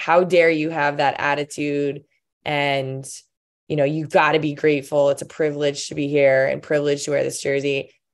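ordinary talk, nothing marked

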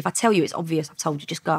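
ordinary talk, nothing marked

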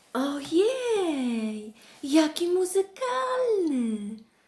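very high, enchanted, delighted cry. Narrator reads Masha reacting to the bear's trumpet playing, delighted. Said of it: "Zachwyciła się Masza".

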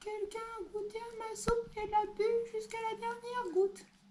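small, very high-pitched voice. Narrator reading the three bears story gives Little Bear's line in a small voice. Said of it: "dit de sa petite voix".

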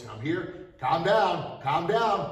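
slow, deliberate lion-like voice. Demonstrating a guard stance toward someone giving you a hard time, lion voice. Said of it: "my lion voice".

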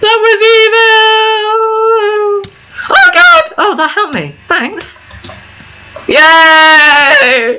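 loud, joyful high-pitched screaming. Playing a game right after a close call, happy screaming. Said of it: "Stop screaming".

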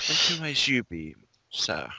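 sly, inquiring tone. Playing a character facing a stranger behind her: sly, questioning. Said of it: "my face is sly, uh, just, n-, questioning".

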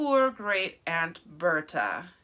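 condescending, patronizing, slow and swooping. Reading an officer with his gloved hand on a casket lid, condescending. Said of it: "he said in a condescending voice".

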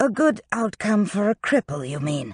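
softly. Master Griffin replies to a remark about his situation, speaking softly. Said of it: "Master Griffin said softly".

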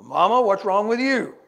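put-on big old voice. Retelling how a man addressed a woman who walked up, imitating a big old voice. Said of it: "he had this big old voice".

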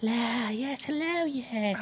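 whispered creature voices. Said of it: "You hear voices in your head saying".

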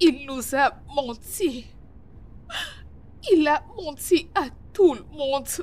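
high and slow, crying, on the verge of tears. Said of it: "Tu pleures?".

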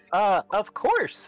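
very high, loud, small piping voice. Tapped on the shoulder and asked to talk, the player answers in her little Nomi voice. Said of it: "she says in her little nomi voice".

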